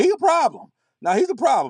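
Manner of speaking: dramatic sports documentary narrator voice, swooping. Promising to be real, the speaker says it in a 30 for 30 NC State voice. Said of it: "thirty for thirty N C State voice".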